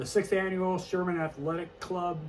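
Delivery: plain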